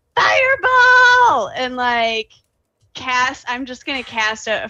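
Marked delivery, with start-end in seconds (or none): 0.1-1.5 very high, loud battle-cry yelling. Playing a character who wakes and runs to a doorway: yelling a spell name. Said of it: "and just yells".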